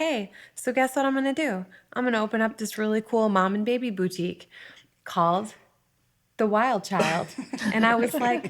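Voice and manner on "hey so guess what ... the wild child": ordinary delivery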